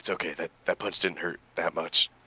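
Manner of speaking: whispering softly. A player's character casts a healing spell on himself after a punch, whispering to himself. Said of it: "whispering to himself".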